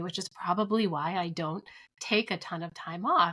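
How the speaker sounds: ordinary talk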